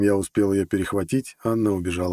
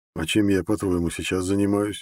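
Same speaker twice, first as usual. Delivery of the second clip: plain reading voice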